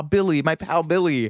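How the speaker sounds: heavy, dripping sarcasm in a high voice. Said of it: "he breaks into this sarcastic impression".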